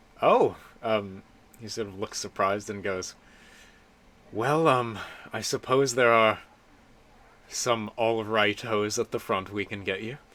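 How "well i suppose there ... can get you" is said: sounding let down and disappointed. Game master voicing a shopkeeper answering a customer's small budget, disappointed. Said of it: "And he seems very disappointed".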